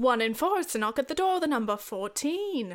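terrible, fake put-on British accent. Calling out bingo numbers, terrible British accent. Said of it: "this is a terrible British accent".

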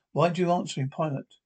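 plain

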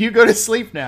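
play-acted childlike robot voice, high, loud yelling. Retelling a film scene of a robot stabbing guards: imitating a yell. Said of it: "he's yelling".

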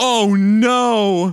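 shrill, very loud yell, "no" drawn out. Retelling a reaction while watching a show: imitating own yell. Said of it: "I yell".

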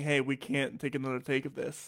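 ordinary talk

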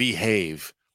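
stern, firm, clipped delivery. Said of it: "gives him a stern look as she tells him".

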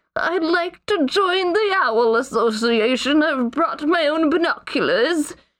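put-on little old man voice, high-pitched and slow. Picturing a little old man applying to a club: put-on little old man voice. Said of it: "a little old man being like".

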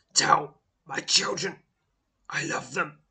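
ragged, strained delivery. Looking up at you in pain and horror, speak in a hurried, ragged voice. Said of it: "Speaks in a hurried, ragged voice".

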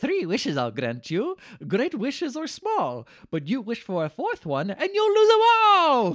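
lilting, stretched, high sing-song leprechaun voice. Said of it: "the leprechaun starts laughing and says".

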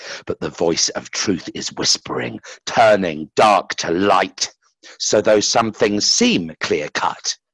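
ordinary delivery

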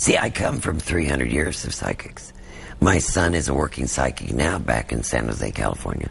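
put-on smoker's voice, New York accent. Imitating the psychic Sylvia Browne: Sylvia Browne impression, New York accent. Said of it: "She would talk like this with, like, a New York kind of a thing".

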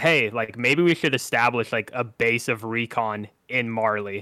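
plain

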